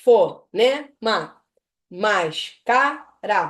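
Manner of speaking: loud, slow, separated syllables. Teaching basic syllable separation by impulse, word in slow separated syllables. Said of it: "falando a palavra pausadamente".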